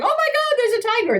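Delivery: very high-pitched, alarmed outburst. Speaker demonstrating the kind of reply to avoid: alarmed tone. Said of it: "I don't want you also going".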